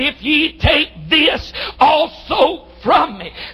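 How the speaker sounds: slow, hurting, pleading voice.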